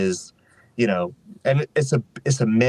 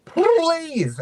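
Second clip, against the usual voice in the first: squeaky, very high cartoon-style voice. Acting out Briar Rabbit at his worst on Splash Mountain, in a Roger Rabbit voice. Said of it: "He sounded like Roger Rabbit".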